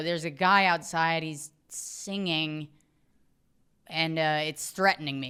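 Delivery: ordinary delivery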